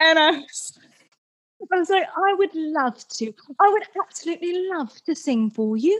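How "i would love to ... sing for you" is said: borrowed, put-on British accent. Retelling an audition answer: imitating a fake British accent. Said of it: "So I did it back".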